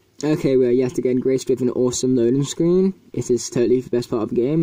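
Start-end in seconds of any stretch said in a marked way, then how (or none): none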